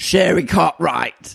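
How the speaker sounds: put-on rough, masculine Cockney man accent. Acting out an imagined woman with a man's voice, booming masculine Cockney voice. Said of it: "I was trying to do like a masculine".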